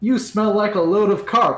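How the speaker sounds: very loud, high shout heard under water. Casting Vicious Mockery at an enemy while swimming: shouting underwater. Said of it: "shout underwater at this guy".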